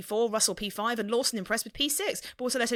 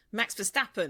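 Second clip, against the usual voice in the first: ordinary talk, nothing marked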